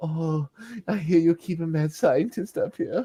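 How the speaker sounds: sultry, exasperated voice. Show how a woman uses one voice for everything, imitating her exasperated, sexy voice. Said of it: "she's got that exasperated, sexy voice".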